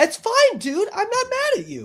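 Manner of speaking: acted, overly nice, very high sweet sing-song. Reacting to a video, copying what the woman said: imitating the woman's nice tone. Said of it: "I can barely hit that tone with my voice".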